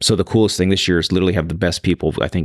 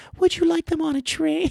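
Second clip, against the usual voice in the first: very high little-guy character voice; 3 dB quieter than usual. A dad reading a book to his child voices the other little guy, very high-pitched. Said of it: "I do a very high pitch for the other little guy".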